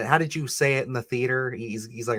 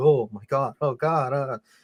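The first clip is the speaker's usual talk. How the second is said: put-on shaking, straining, trembling voice. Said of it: "And he starts shaking".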